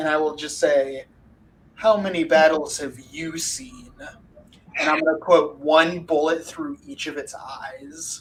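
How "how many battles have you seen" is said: haughty, self-important, pretentious voice. A player voices the captain of the guard, in a pretentious voice. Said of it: "in a pretentious voice that you might recognize".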